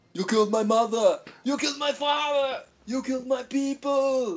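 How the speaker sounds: slow, high, booming, deliberate barbarian-hero voice. Answering a request to hear his version: Arnold Schwarzenegger impression. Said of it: "Let's hear your version".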